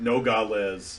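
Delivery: American-style pronunciation. Explaining how an American would say the place name: Americanized pronunciation. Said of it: "if you say Nogales like like Americanified".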